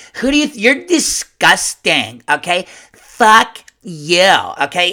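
loud, swooping, combative upset rant. Showing how people sound when they complain: imitating an upset complainer's tone. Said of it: "It's always like".

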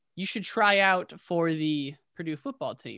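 normal talking voice

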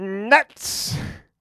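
put-on very loud, high old man holler. Recalling an old vendor at Dodger Stadium, loud old man voice. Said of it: "Really loud old man voice".

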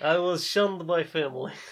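vague, made-up, put-on Eastern European accent. Telling a story in first person, in a put-on Eastern European accent. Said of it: "I don't know if this is a Russian accent".

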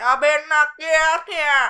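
booming, very loud, high-pitched Cajun man's voice. Voicing a cajun man on a boat warning two boys. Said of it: "He's the Cajun".

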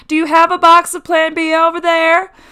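very loud high-pitched yelling. Retelling how the clerk called to the other clerk: imitating a clerk shouting. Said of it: "shouts to the other clerk".

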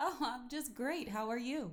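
sugary, phony, fake-sweet put-on niceness. Cousin answering the podcast host's greeting, phony voice.

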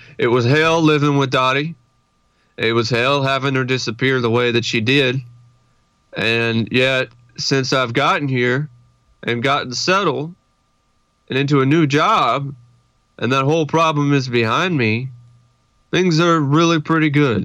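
very sedated, drugged-sounding delivery. Quoting one of a man's last interview lines, imitating a sedated man. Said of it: "He's very sedated".

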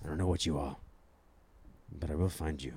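deep, low-pitched near whisper. Showing how to creep at a bathroom door: half-whispered Liam Neeson impression. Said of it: "I'll whisper Liam Neeson in the door".

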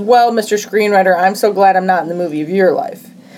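ordinary talk

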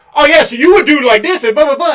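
yelling-level loud talk. Show how the podcast host agrees with a guest and adds more, in a super loud Steve Austin imitation. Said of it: "And like super loud".

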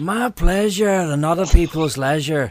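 put-on Scottish accent slipping into Canadian accent. Invited to say a line, the speaker tries it Billy Connolly style: Billy Connolly impression. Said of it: "that was slightly Canadian".

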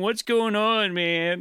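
very slow, drawn-out drawl, every word stretched. Imitating a roommate asking what is wrong: Cheech and Chong voice. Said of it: "All Cheech and Chong".

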